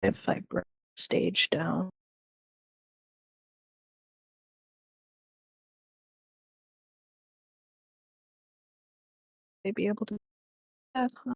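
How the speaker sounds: hushed, barely audible, very quiet character voice. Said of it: "just quietly says".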